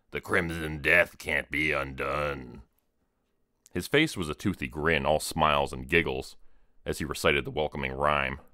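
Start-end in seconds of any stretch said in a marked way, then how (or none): 0.1-2.6 slow, low growl deep in the throat. Narrator reading the last line of a clown's welcoming rhyme, in a low growl. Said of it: "which he said in a low growl".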